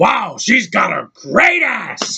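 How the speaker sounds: overacted, hammy, swooping and slow, dragged-out delivery. Quoting Al Pacino's line from Heat: Al Pacino impression. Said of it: "in the movie Heat, he's like".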